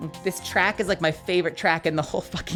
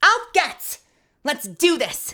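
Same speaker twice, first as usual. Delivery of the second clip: put-on aggressive girl character voice; 8 semitones higher, 5 dB louder than usual. Reading a game character's eager line aloud: voicing an aggro girl. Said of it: "when I play an aggro girl like this".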